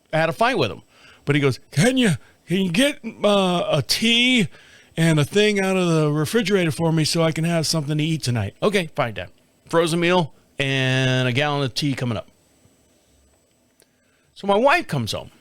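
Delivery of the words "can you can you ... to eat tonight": halting, stumbling delivery. Telling how his father asked him to get dinner, imitating his dad's voice. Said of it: "I have to do his voice".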